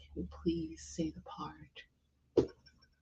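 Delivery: slow, very soft, barely voiced pleading whisper. Retelling asking the minister during a ceremony: imitating own whisper. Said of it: "whisper to the minister".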